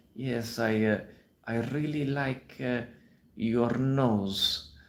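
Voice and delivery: halting put-on Romanian accent, nasal and stretched. Showing a man hesitantly complimenting a woman, hesitant put-on Romanian accent. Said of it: "This is my Romanian accent here".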